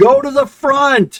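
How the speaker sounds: shrill, high, loud, drawn-out, far-carrying yell. Voicing a flying character who points to the player and yells. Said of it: "she points to you and yells".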